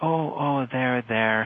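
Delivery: soft, soothing, comforting and calming voice. Explaining how a parent comforts a crying child, demonstrating a soothing voice. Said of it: "there's this kind of soothing voice".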